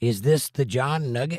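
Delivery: normal talking voice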